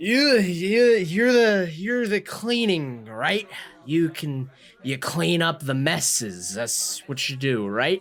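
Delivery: put-on high, stumbling, in-your-face obnoxious drunk voice. Playing a drunk character barging into someone at a bar: acting drunk and obnoxious. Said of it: "he says".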